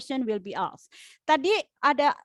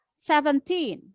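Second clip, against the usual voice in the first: put-on "seventeen" with "-teen" emphasized. Explaining english word stress in indonesian, stress on last syllable teen. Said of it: "itu stresnya di akhir".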